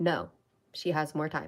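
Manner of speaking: authoritative, firm, commanding voice. Retelling a second voice answering the first: imitating a commanding voice. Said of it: "I hear a commanding voice respond".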